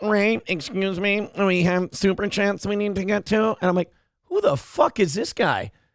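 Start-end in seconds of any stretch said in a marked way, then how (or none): 0.0-3.6 odd, weird put-on little-kid voice. Retelling a guy cutting in on the speaker and Ray, in a weird kid voice. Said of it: "weird, like, kid voice coming in".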